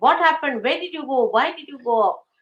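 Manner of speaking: shouting. Retelling how she shouted at the child: imitating someone shouting. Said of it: "So she shouted at her".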